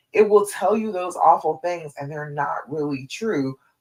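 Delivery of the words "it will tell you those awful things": usual speaking voice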